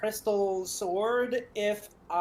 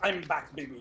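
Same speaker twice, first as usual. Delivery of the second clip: put-on pirate voice, lower and quieter; 5 semitones lower, 5 dB quieter than usual. Telepathically speaking into the other players' heads: pirate voice. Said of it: "still in pirate voice".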